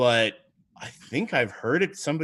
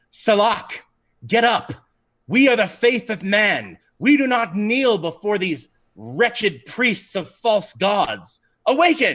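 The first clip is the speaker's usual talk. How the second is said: forceful, loud, powerful, commanding rallying voice; 7 semitones higher, 5 dB louder than usual. Retelling what she says on her turn, in a very powerful voice. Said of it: "in a very powerful voice".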